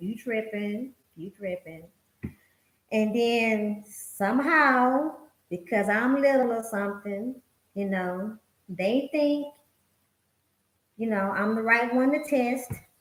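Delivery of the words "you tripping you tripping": soft, calm, cool, unbothered tone, acted. Recalling giving people a warning in younger years, retelling a calm, cool warning. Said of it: "in my calm, cool voice".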